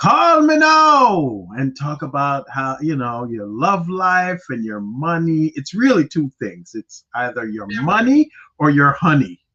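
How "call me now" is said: fake Jamaican accent pitched very high. Quoting a woman who talked to callers as a psychic, imitating a supposedly jamaican accent. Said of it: "But she used to say".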